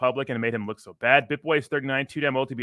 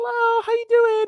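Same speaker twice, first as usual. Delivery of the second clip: very high, fake, polite customer-service voice; 5 dB louder than usual. A speaker mocking fake-nice personas in interviews, using a fake customer service voice. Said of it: "It's like a customer service voice".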